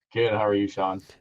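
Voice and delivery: sounding down, dejected tone. A guest answering the host's greeting, sounding down. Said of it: "you sound very down".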